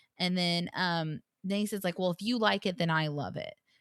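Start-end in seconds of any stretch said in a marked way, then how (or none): 2.0-3.5 put-on catty, snide tone. Retelling what a cast member said to another: imitating a catty tone. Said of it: "But he's just being catty".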